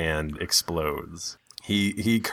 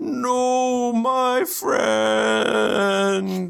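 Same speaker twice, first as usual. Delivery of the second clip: very high, mournful, grieving cry. Voicing a golem reacting as its companion crumbles: golem voicing grief. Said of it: "the other golem goes".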